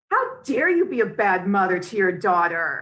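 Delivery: stern, scolding tone. Imitating a talk show host scolding his guests: imitating Jeremy Kyle scolding. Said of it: "very kind of scolding of his guests".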